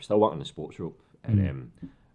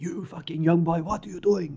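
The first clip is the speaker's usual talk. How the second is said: very high, shrill, piercing scream; 13 semitones higher, 6 dB louder than usual. Retelling a teammate's outburst at a charity game: imitating Rudy Vata screaming. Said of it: "Screaming at me".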